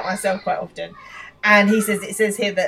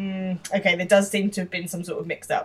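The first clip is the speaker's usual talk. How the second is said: ordinary talk, nothing marked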